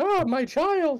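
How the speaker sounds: acted put-on woman's voice. During a tabletop game, a player speaks as a character in a put-on woman's voice. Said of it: "in Akhenaten's best like woman or yeah that voice".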